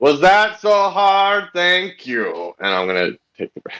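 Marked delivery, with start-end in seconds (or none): 0.0-2.5 very high-pitched, very slow, drawn-out yelling. Player's character calls after a man leaving while muttering, yelling back. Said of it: "just like yell back like".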